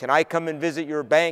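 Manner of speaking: ordinary delivery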